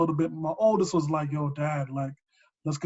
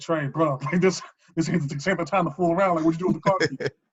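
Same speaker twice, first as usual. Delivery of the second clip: ordinary talk, nothing marked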